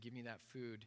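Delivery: ordinary talk, nothing marked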